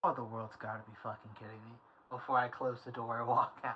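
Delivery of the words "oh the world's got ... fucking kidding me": low muttering mumble under the breath. Playing a character who is handed a Skeletor nightlight: mumbling under breath. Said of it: "I just mumble under my breath".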